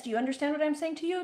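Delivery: rapid, rattled-off put-on Indian accent. Retelling how a woman launched right in, imitated Indian accent. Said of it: "she's an Indian woman. She speaks very quickly, and I don't even know if I can do an impression of this".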